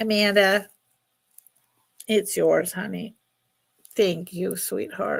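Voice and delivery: crying, tearful. Ending the sale to a buyer and thanking her, crying for real. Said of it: "now I'm crying for real".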